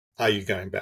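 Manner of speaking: normal talking voice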